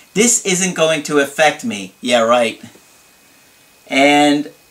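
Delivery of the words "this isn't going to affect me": ordinary talk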